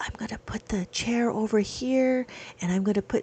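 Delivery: hushed, soft whispered voice. Imitating a lady with stickers who always whispers: imitating someone whispering.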